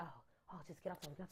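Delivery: play-acted anxious, hushed, hurried, nervous delivery. Retell how the uninsured guy reacted to your phone call with your dad, imitating a man getting nervous. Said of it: "the guy's getting nervous".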